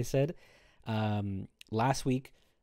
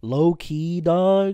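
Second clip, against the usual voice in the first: belted out loudly, raised, in fake-cool manner; 7 semitones higher, 12 dB louder than usual. Talking like a wannabe Zoomer to mock the slang: wannabe Zoomer voice. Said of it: "I'm gonna talk like a, like a wannabe Zoomer".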